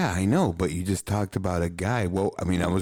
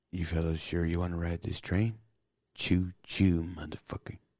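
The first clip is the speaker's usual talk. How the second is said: quieter delivery than the surrounding speech; 6 dB quieter than usual. Quoting a movie line to another speaker: imitating Hancock.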